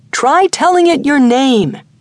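yelling loudly. Narrating a story, the guide yells up at the narrator: yelling up. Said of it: "When our guide [name] landed us here to oblige my desire to see one of the natives close up".

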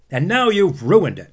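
angry, high-pitched yell. Narrator reads an older brother angry at his little brother, shouted. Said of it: "he shouted".

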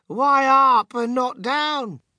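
high, drawn-out group shout, all at once. After a man insists they must go up, everyone asks back at once; shouted together. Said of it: "they all shouted at once".

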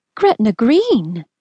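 shock seeping into the voice. Answering a suggestion that they marry, the narrator replies, shocked. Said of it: "I allowed some shock to seep into my voice".

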